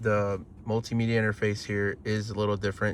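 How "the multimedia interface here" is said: ordinary delivery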